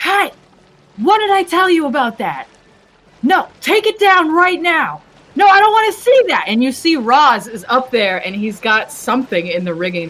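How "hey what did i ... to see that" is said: very high, loud, ringing scolding call. Voicing Hawthorne calling out across the water to the crew: voice ringing out over water. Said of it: "You can hear their voice just ringing out over the water".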